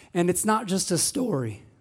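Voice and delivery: voice breaking and cracking as it goes. Speaker introducing a Bible story for Palm Sunday: voice cracking. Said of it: "voice crack".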